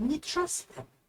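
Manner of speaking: sweet, gentle, very hushed whisper. Game narrator voicing a character who goes over to a player: sweet whisper. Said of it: "whispers to you in like a very like, sweet voice".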